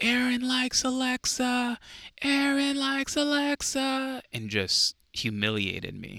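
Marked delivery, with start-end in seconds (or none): 0.0-4.2 very high, stretched, drawn-out taunting scream. Retelling a friend yelling at lunchtime: imitating someone screaming. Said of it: "he screams at the top of his lungs".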